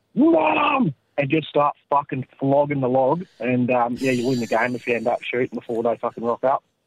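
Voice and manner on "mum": loud yell. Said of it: "you yell out".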